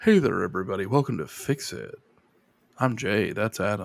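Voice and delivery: voice dropped right down, very deep, soft bass. Co-host shows how low the voice can go with a mock show intro. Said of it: "I can go real low".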